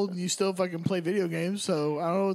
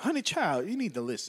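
badly done put-on southern woman's voice. Show off your impression to a listener who calls it terrible, in a bad Paula Deen voice. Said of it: "That's Paula Deen".

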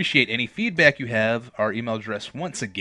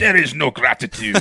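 booming, loud, over-the-top German accent; 3 semitones higher, 9 dB louder than usual. Urged by the others to try it, an over-the-top german accent. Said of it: "So you can't do an over the top German accent?".

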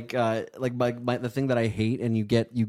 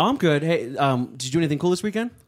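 cheery, friendly conversational voice. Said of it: "I'll give you a scenario".

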